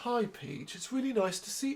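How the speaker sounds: put-on soft, almost kind voice. Imitating Koopa greeting Peach: softly spoken, almost kind Koopa voice. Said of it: "this really odd, softly spoken, almost kind voice".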